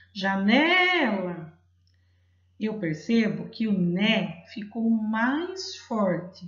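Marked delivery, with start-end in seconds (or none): 0.1-1.5 called out loudly, drawn out. Showing that calling a word out makes its syllable stronger: calling out janela. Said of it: "Então eu chamo assim".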